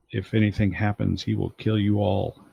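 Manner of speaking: whispering very quietly, hushed. Voicing a character warning the others while he's not around: whispering very quietly. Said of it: "whisper very, very quietly".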